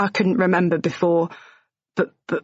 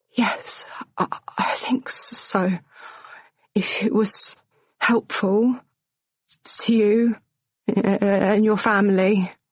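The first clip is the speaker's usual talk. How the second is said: gentle, slow, soft whisper; 2 semitones higher than usual. Joe answers Ash's question in front of a guard, whispering softly. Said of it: "he whispers softly".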